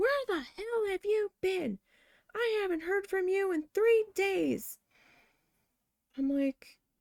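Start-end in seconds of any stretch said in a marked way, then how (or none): 0.0-4.8 play-acted, shrill, very high scolding scream. Retelling a phone call where the mother screamed at the speaker, imitating mother screaming. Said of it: "my mother started screaming at me".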